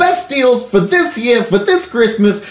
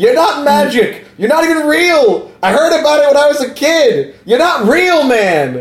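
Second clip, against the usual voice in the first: mock, full-on screaming, yelling tirade; 3 semitones higher than usual. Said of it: "started screaming and yelling that the Santa".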